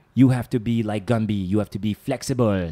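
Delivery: put-on French Canadian accent. Speaker retells what a man told him, imitating a French Canadian accent. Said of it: "with like a French Canadian".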